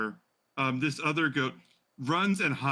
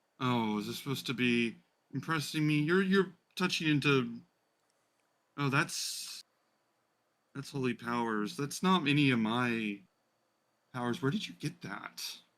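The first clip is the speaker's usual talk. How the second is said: slightly irritated, put-out, mildly annoyed tone. Voicing a creature questioning a player's holy power: mildly annoyed. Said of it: "mildly annoyed and just says".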